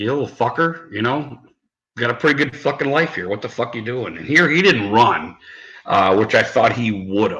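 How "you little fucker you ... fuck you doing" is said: fed-up, half-angry, exasperated scolding tone. Recalling scolding the one they had adopted, retelling half-angry scolding. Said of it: "I was kind of half pissed".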